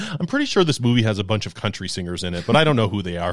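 ordinary talk, nothing marked

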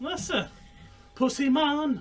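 put-on Jamaican-sounding accent. Reacting to a joke about a guy who catches a ball, sounding Jamaican. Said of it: "I sounded Jamaican".

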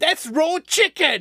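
put-on high, loud, outraged yell. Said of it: "I've been watching a lot of Gordon Ramsay".

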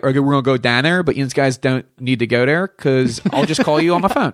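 Pittsburgh-style accent. Asked how people there speak, demonstrating the local way of talking; Pittsburgh accent. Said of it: "he kind of talks like this".

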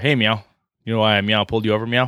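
dry, dead-level cop delivery, flat and rattled off. Retelling a comedy sketch where a cop pulls a guy over, mock deadpan delivery. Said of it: "he has to deadpan it".

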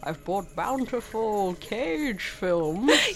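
soft, acted masked villain voice. Joking about Santa Cage films, a speaker talks in a Bane voice. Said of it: "You sound like Bane again".

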